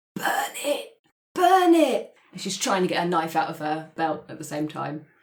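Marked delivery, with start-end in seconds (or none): 0.2-2.2 dry croak, very high, slow. Narrating the scene as Jess comes out and sees what this is; Jess croaking from dry mouth. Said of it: "from a very dry mouth ... she croaks out".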